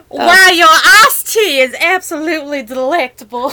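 put-on southern US accent. Answering someone who claims they can do one, showing a southern accent. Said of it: "I can do a southern accent".

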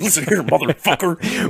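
loud wrestling promo voice. Mocking a rival podcast as if cutting a wrestling promo: mock WWE wrestling promo. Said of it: "we're doing a W W E, like, promo".

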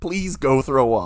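begging. Retelling pleading with a drunk friend at a party: imitating begging. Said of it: "I was begging you".

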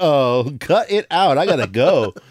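very slow, with each word stretched out. Retelling how he reacted to being kicked out: Dave Coulier impression. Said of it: "And he was like".

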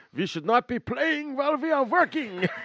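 put-on high-pitched shout in heavy Hungarian accent. Telling how an actor scolded a mocking co-star on set, imitating Lugosi yelling in thick Hungarian accent. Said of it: "yelled in his thick Hungarian accent".

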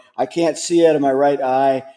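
normal talking voice

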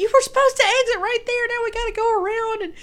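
very high, loud screaming rebuke. Retelling what he screamed at the speaker after a missed exit, retelling a scream. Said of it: "He's screaming at me".

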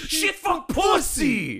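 mock shrill, exasperated, high swooping frustrated yell. Describing what they now exclaim when stubbing a toe: imitating a frustrated yell. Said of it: "I'm just like".

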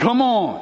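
powerful voice with stern authority. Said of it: "in a powerful, stern voice".

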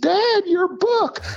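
very high, thrilled, excited shriek of joy. Retelling a daughter seeing the book at pickup: imitating a daughter screaming. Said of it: "She screams".

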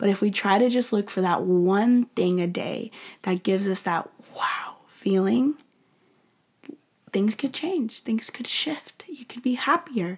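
quiet whispering. Wrapping up an episode while addressing listeners as guys, whispering. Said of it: "I don't know why I'm literally whispering".

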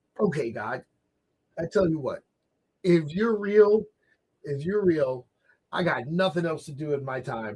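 put-on laughing, amused talk through a laugh. Retelling what a guy said to god, imitating someone talking laughingly. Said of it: "in a laughing way".

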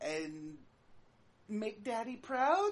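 wavering, unsteady, unsure voice with rising pitch. In a tabletop role-play, a character replies in a wavering, uncertain voice. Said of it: "With a wavering voice".

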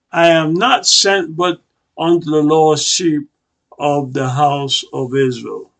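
normal talking voice

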